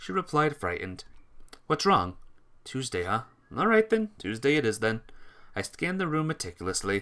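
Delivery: ordinary delivery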